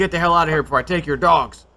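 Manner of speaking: put-on half-strength, mild old woman's holler. Retelling how an old lady came out of a house: imitating an old lady screaming. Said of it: "starts screaming at him".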